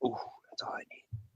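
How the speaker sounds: soft, breathy, playful whisper.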